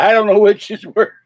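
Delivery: high, loud laughing through the words. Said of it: "I keep laughing".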